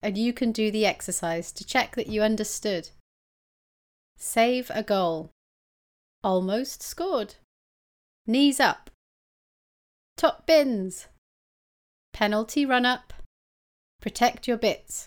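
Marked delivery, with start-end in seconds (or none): 4.2-15.1 very slow, spaced-out, each word set apart. English teacher repeating the exercise names for learners, really slowly. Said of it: "I'm going to say them really slowly".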